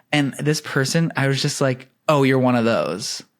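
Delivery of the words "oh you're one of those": dry, deadpan, humorless delivery. Retelling own cutting remark to a new acquaintance: imitating own humorless tone. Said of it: "without, like, any, like, humor in my voice".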